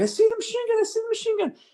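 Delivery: very high, rushed, excited radio-style delivery. Retelling spotting a machine gun over the radio: retelling a super high-pitched excited call. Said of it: "super high pitched, and I'm super excited".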